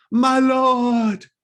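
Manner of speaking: calling out loudly. Voicing a zealot woman announcing a newcomer: crying out. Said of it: "she cries out".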